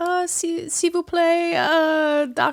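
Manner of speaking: put-on French accent. Retelling asking downstairs for a doctor: put-on french accent. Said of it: "I can do a really good accent".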